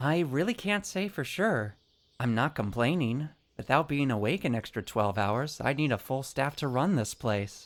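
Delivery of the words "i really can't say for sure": hesitant and pitched up, then lightening to breezy. Asked whether barely sleeping is a hybrid trait, answering unsure, turning lighthearted. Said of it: "(Unsure, into lighthearted)".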